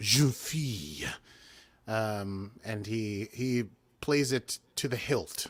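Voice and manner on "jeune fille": awful, hammed-up, over-the-top put-on French accent. Retelling a scene, imitating a character's over-the-top French accent. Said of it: "an awful French accent".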